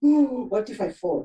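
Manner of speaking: ordinary talk, nothing marked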